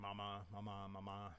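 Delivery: normal talking voice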